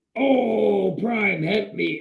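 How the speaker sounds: fake pleading robot voice. Acting out a robot that gets killed early: robot getting killed, pleading. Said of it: "So you just killed me".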